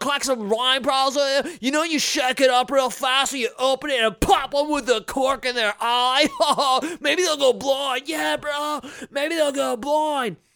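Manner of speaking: put-on surfer bro voice. Mocking a governor from Florida: mock Floridian surfer dude voice. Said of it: "my voice is totally Floridian, bro".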